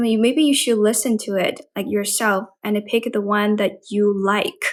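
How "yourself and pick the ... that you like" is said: ordinary talk, nothing marked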